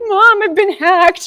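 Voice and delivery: put-on very high, very loud crying wail. Retelling a son's panic over a hacked computer: imitating a crying son. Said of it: "and he's crying".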